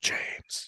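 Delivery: hushed whisper under the breath. Retelling telling a child to look at an owl: retelling a whisper. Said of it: "I whispered to my kid".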